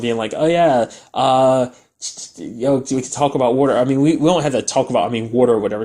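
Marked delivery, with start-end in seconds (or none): 0.3-3.8 put-on awkward flirty tone, tripping over words. Retelling a character's phone call: imitating flirtatious talk. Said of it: "getting a little flirtatious on the phone".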